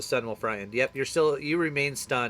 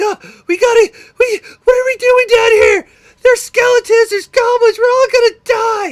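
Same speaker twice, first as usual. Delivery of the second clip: frantic, shrill, very high, very loud panicked yelling; 15 dB louder than usual. Voicing a frightened character facing a monster: panicked NPC freaking out. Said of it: "He's, like, freaking out".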